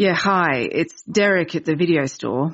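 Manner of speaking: unhurried, slow, bored drawl. A video store worker leaves a voicemail for an interviewer, in a slow, bored drawl. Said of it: "It starts in a slow, bored drawl".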